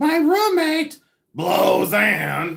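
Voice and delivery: high, loud, drawn-out, belted delivery. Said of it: "That's the way she would say it".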